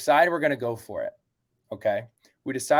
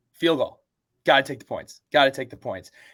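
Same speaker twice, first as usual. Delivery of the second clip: ordinary delivery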